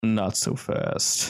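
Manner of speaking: deep, low, rasping, gravelly voice. Game narrator voices an unseen character whose location is hard to tell, low, gravelly voice. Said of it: "a low, gravelly voice that just says".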